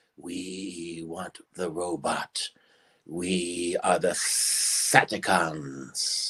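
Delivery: put-on alien voice, deep, hushed, very slow. Answering a request for Lost in Space voices: Sadakons voice. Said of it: "they know who I'm doing".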